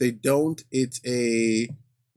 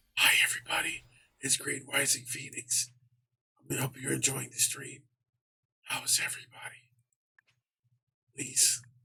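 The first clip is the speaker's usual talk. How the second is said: hushed, whispered voice; 8 dB quieter than usual. Teasing a friend by imitating their stream intro: imitating Green whispering. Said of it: "Please tell me you weren't whispering".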